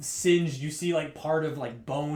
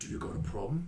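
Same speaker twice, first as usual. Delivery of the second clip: orc voice, quieter; 7 dB quieter than usual. Voicing an orc who hands off his weapons: orc voice. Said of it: "and he's like".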